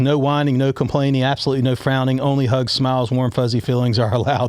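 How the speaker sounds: normal talking voice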